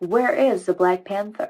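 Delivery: put-on American TV news reporter accent. Retelling how a news reporter ended a murder piece: american accent. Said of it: "Do you know I had an American accent?".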